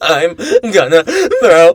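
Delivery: loud, high pleading with wildly swinging pitch. Recounting a movie scene where he pleads with Keanu Reeves; imitating Michael B. Jordan pleading. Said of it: "that type of like pleading".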